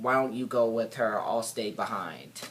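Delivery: ordinary talk, nothing marked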